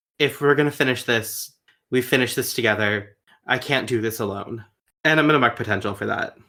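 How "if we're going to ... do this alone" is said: normal talking voice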